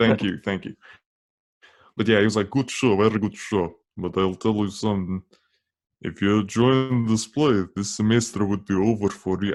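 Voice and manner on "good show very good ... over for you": put-on Russian accent. Retelling what their dad said after a show, imitating dad in a russian accent. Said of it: "I am kind of doing a Russian accent right now".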